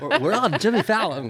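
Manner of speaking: belted out high and badly. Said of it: "that was a terrible Jimmy Fallon impression".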